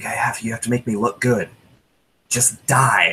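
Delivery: quiet mutter under the breath. A player describing their character walking up to a creature, muttered under breath. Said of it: "under my breath".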